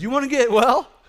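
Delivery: acted taunting voice. Reading Jesus's question to the lying man aloud: acting out a trolling question. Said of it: "This is old school trolling right here".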